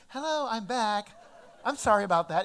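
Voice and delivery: loud, overly polite put-on phone voice. A parent getting back on the phone after scolding the kids, put-on politest voice. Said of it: "in your politest voice".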